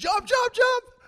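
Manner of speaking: loud, high-pitched shout.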